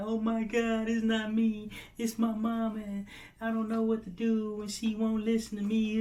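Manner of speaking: high, mock tearful sobbing voice. Retelling how she turned around at the exit: imitating someone crying. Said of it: "literally crying".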